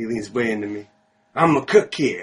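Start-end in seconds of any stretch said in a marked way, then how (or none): 1.4-2.2 put-on drunk man voice, higher and louder. Retelling what a drunk stranger said on approaching: imitating a drunk man. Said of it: "he's very drunk".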